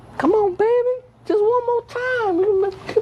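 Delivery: put-on smooth sweet-talking voice. Imitating how churches talk to people: imitating a pimp's sweet talk. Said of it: "like a big old pimp and you a hoe".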